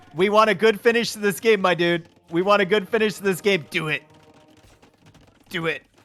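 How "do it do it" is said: deliberate, slow delivery, each word drawn out. Urging a player to make a move: Palpatine voice. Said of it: "I even put on my Palpatine voice".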